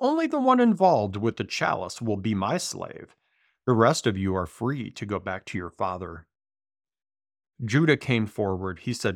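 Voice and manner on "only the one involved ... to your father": ordinary delivery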